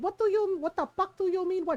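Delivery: put-on angry voice. Retelling how mom confronted him, imitating an angry Filipino mom. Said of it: "she had like the angry Filipino mom voice".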